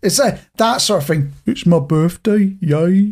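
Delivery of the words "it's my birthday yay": butchered, slow, glum, depressed-sounding Brummie accent. Demonstrating a regional accent while chatting, in a butchered Brummie accent. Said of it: "I'll stop butchering the accent".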